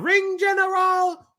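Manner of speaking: very high, slowed, drawn-out announcer call. Show how she says it now that she has fixed her "general", imitating her slowed-down "general". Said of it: "But now she slowed it down".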